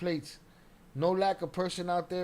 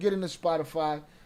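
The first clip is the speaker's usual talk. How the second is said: normal talking voice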